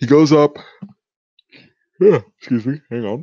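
words said through a yawn. Retelling a scene's plot to a co-host, yawning. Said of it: "I had to yawn there".

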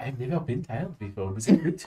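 soft, hushed half-whisper. Acting out what the characters say as they leave: half-whispering. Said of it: "It's whispering as we leave".

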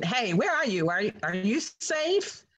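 light, playful put-on yelling. Retelling a sister's call in a speeding van: imitating someone yelling. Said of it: "she's yelling".

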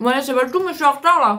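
speaking with food in mouth. Eating the little cakes while talking, wrap up speaking with mouth full. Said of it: "je prends la bouche pleine".

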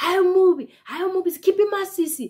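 shrill, very high, heckling, taunting shout. Retelling how a man across the road screamed at her: imitating a man screaming. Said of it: "Like, screaming".

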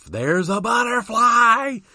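put-on acted-out, very high, frantic little-kid shriek. Retelling being a child scared of a butterfly: imitating own childhood screaming. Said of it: "I'm screaming".

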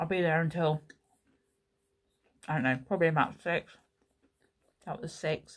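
talking with mouth full. Speaker eating toast while telling viewers about the workday: talking with mouth full. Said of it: "Talking to you with my mouth full".

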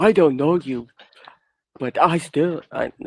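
talking-squirrel cartoon voice. Doing a Doug impression that the others say sounds like Kung Fu Panda. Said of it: "Are you trying to do Kung Fu Panda?".

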